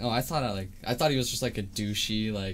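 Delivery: ordinary delivery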